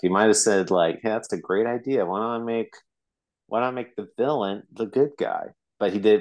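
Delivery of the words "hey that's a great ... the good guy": normal talking voice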